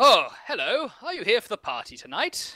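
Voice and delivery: high, refined nobleman voice. Voicing a nobleman greeting a guest outside the manor: nobleman in finery voice. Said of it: "a nobleman sort of walks past you in his finery".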